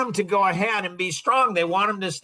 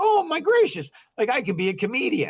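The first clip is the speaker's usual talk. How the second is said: put-on giddy, thrilled little-boy excitement with swooping pitch; 4 semitones higher than usual. Retelling going home after hearing he could be a comedian: imitating own excitement. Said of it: "I'm all excited like a little boy".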